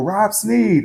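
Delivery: play-acted very high, shrill scream. Retelling how people in cars scream out their window: imitating someone screaming. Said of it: "screaming out their window".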